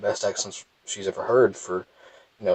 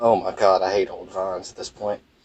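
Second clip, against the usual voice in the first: ordinary delivery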